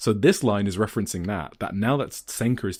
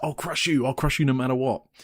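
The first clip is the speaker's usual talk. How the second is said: imitated scream, higher-pitched; 5 semitones higher than usual. Retelling a wrestler getting in a rival's face: imitating someone screaming. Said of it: "gets in Takumi's face and screams".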